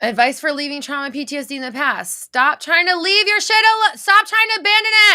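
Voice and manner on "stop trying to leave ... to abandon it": very loud, very high-pitched scolding yell. Answering someone who already asked for advice, telling them you love them, yelling. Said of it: "That's why I'm yelling at you".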